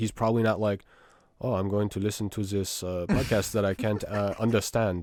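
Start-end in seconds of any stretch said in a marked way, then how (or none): 1.4-5.0 badly done, fake, put-on German accent. Imitating a German podcast listener, in an awful German accent. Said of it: "That was an awful German accent".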